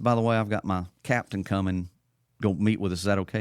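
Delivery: ordinary talk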